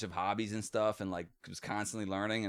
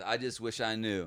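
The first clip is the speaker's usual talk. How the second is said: normal talking voice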